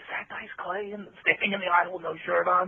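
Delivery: high, curious, gossipy stage whisper. Retelling what passengers on a plane whispered: imitating people whispering. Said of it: "you can hear people whispering".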